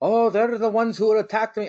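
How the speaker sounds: failed attempt at Irish accent. Imagining Finn Balor coming out after the commercial break: Finn Balor accent attempt. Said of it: "I can't do his accent".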